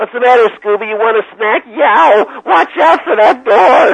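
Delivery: very high, loud cartoon voice. Recalling the Scooby-Doo voices he did for them, Shaggy cartoon voice.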